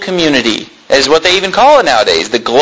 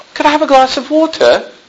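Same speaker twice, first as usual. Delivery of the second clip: put-on British accent, pitched up; 9 semitones higher than usual. Man recalls how his wife talked when he first met her, put-on British accent. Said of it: "she talked like she was British".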